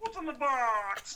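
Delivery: high squeaky voice with box stretched. Doing a movie line as asked: Kermit the Frog voice. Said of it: "Give me a Kermit one".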